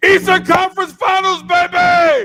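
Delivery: shrill, very loud, high, drawn-out, hyped-up scream. Screaming a line after asking another speaker what to scream: scream. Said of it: "what do you want me to scream?".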